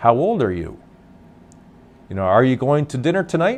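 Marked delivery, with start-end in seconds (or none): 2.2-3.6 rising question tune at the end on "tonight". Explaining how the voice goes up in a question: rising pitch on tonight. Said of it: "There's the sound of the voice going up and making the sound of a question".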